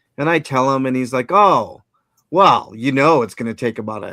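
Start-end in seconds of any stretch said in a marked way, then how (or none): 1.3-4.2 put-on gruff, rude voice, louder. Retelling what the clerk at the front desk said: imitating a gruff bank clerk. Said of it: "gruff, like, like an asshole".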